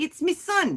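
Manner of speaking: put-on Cockney accent. Listing accents they can do, the speaker tries a Monty Python-style Cockney accent. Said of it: "All I can do for London Cockney".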